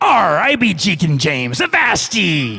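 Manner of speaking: put-on slow, drawn-out, salty old pirate captain voice. Announcing an impersonation of Deacon James, the speaker performs it: pirate-style Deacon James impression. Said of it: "that was Deacon James if he were a pirate".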